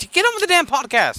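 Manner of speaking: shouting. On a podcast, snapping at the other host, yelling. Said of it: "Why are you yelling?".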